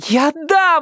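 very high, scared, frightened shouting cry. Narrator reads a woman answering through the door to those pounding on it, shouting. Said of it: "закричала Ирка".

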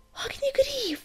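cried out loudly, way up high. Reading the princess calling out to the griffin, exclaimed. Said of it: "воскликнула принцесса".

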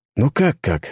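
breathed out on a sigh. The narrator answers a frightened failed thug in a dark alley, sighing. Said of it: "вздохнул я".

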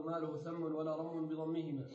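plain

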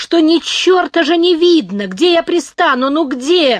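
high, loud, plaintive, pleading shout. The captain argues with an old man about where to land, plaintive shout. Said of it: "жалобно закричал капитан".

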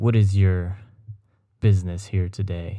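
imitated aggressive man's voice. Retelling a guy at the post office door, imitating an aggressive man. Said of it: "really aggressive".

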